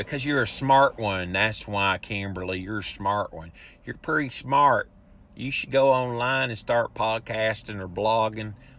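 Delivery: speaking in a Southern accent. Replying to a listener's comment just read out, in a Southern accent. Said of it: "Why am I doing my southern accent?".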